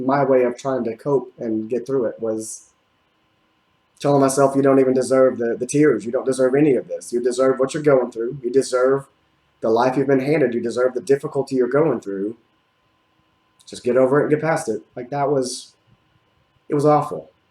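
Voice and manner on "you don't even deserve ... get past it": normal talking voice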